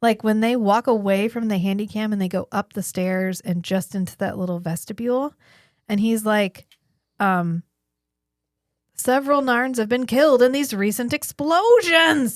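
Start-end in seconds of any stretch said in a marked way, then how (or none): 8.9-12.4 loud, unconvincing, stagey shouted yell. Speaker mimics an actor's delivery of a scene line: imitating an actor yelling. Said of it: "he's like yelling it really loudly".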